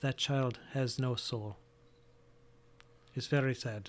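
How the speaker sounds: low, hushed, discreet voice. Voicing a midwife who takes the players aside: low voice. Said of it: "she says in a low voice".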